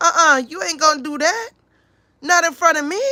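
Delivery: mock grandmother voice. Telling how some grandmothers react to cursing around kids: imitating grandmothers. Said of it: "some grandmothers, they be like".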